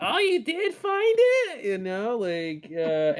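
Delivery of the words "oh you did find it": very high, botched put-on woman's voice, squeaky. Discussing a favourite scene, the speaker quotes a character's reply, bad Lucy impression. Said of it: "I can't do her voice".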